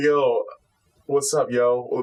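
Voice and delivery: very slow, heavily drawled slang words. Imitating how an anime character talks after transforming: Okurin's slang talk. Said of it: "he kinda talks like".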